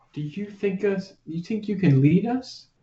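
whispering in character. Asking a party member in the back of the pack: whispering in character. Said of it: "As I'm whispering to him".

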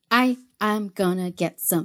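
put-on little creature voice. Voicing a little guy on a stick: little guy voice. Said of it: "little guy".

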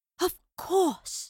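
words gasped out, pitched high. A woman, noticing the pendant on Boudicca's neck, speaks to Madeline, gasping. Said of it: "she gasped".

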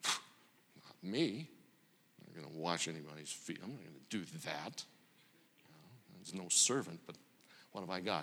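petulant muttering under breath. Acting out a disciple avoiding the foot-washing: whispering under breath like a petulant child. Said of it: "each whispering under his breath".

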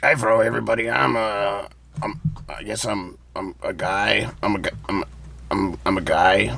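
low, growled-out voice. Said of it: "I just did a voice and it came out like this".

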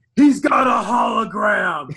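very slow, loud, drawn-out shout. Quoting a favorite movie line by Michael Ironside: imitating Michael Ironside shouting. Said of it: "he just shouts".

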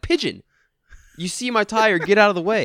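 mock all-out screaming. Retelling yelling at a pigeon in the way of a tire, mock-screaming. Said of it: "And I'm just screaming".

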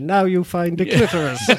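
synthetic, machine-like robotic computer voice. Retelling what a computer voice instructed, in a computer voice. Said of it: "a computer voice then said".

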